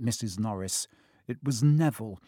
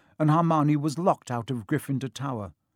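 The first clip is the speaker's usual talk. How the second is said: plain reading voice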